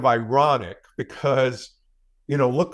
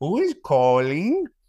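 fake, put-on old-lady Spanish accent; 3 semitones higher than usual. Describing a man who answers his phone in a put-on old-lady spanish accent. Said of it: "He puts on this voice".

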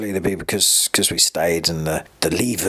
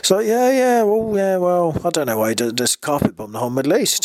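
very high, mocking, swooping sing-song sarcasm; 11 semitones higher than usual. Retelling a friend's reaction to the news: imitating a sarcastic remark. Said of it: "obviously sarcastically".

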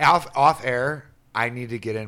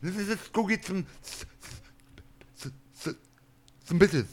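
put-on high kid voice, stammering on the s; 8 semitones higher, 4 dB quieter than usual. Retelling how the stuttering kid swears: imitating a stuttering kid swearing. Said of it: "I love it when he swears. Like".

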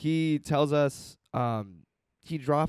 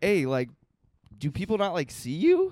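ordinary talk

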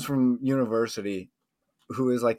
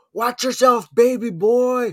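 very high, shrill, drawn-out put-on Boston accent; 12 semitones higher, 7 dB louder than usual. Describing how people heckled a PGA player: imitating a Boston accent. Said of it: "It's just the fucking Boston accent".

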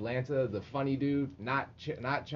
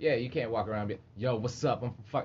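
plain

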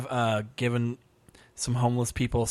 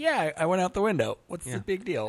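offhand, nonchalant, breezy sing-song tone; 6 semitones higher than usual. Retelling a scene with George and his girlfriend: nonchalant George impression. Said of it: "he just nonchalantly just goes like".

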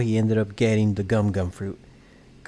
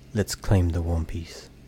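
put-on very serious tone, lower; 4 semitones lower than usual. Retelling what a character says while looking at someone, in a very serious tone. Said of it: "in a very serious tone".

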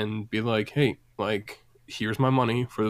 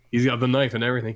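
ordinary talk, nothing marked

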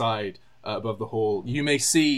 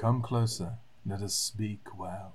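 eerie, hushed voice calling from a distance; 2 semitones lower, 8 dB quieter than usual. A game master voices a distant voice heard from afar, in an eerie, quiet voice. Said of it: "eerily from such a distance, speaking quietly".

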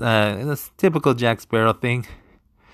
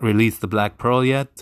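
usual speaking voice

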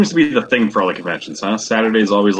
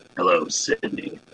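breathy, hushed, whispered horror-villain voice; 2 semitones lower, 8 dB quieter than usual. Recalling a guest introducing them at the booth, in the Ghostface voice. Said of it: "he did do the Ghostface voice".

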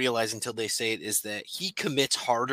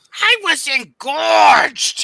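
very high, very loud, shrill shriek; 12 dB louder than usual. Recalling a favorite video, the speaker does a shouted Gilbert Gottfried impression. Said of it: "I'm shouting".

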